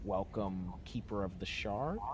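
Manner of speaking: ordinary delivery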